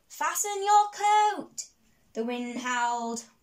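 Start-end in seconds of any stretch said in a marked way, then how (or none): 0.1-1.6 very high, loud crying-out voice. One rabbit calls to a smaller one in the howling wind; crying out. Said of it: "she cried out".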